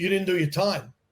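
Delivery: normal talking voice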